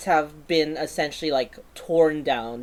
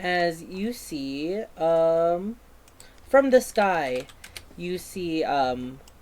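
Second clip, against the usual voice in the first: usual speaking voice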